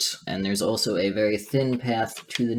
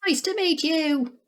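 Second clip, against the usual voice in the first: put-on teeny, tiny, very high pixie voice. Voicing a little pixie greeting the players: tiniest possible voice. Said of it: "says hello in the tiniest possible voice".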